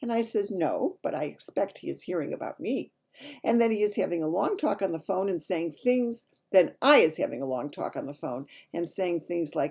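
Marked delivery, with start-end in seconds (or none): none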